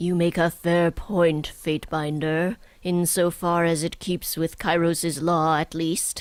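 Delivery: very masculine, exceedingly manly voice. Reading a character's reply to the Fatebinder aloud, in an exceedingly manly voice. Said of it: "I've given her an exceedingly manly voice".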